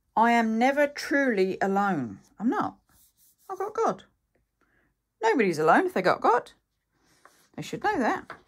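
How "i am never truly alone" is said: plain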